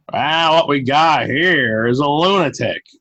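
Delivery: slow, deliberate, drawn-out delivery. Retelling a movie character who does his best Columbo impersonation: Columbo impersonation. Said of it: "he does his best Columbo impersonation".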